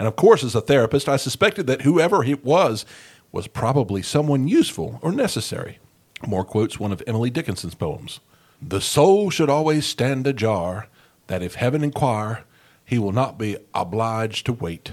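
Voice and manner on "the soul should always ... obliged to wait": slipping into an American Southern drawl. A therapist quoting a poem, lapsing into a southern drawl. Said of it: "without the lapse in the southern drawl".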